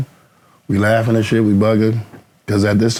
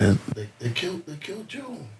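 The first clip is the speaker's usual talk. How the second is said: mock crying, higher pitch and quieter; 6 semitones higher, 12 dB quieter than usual. Retelling a friend banging on the door at night: imitating someone crying. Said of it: "My man just crying and crying".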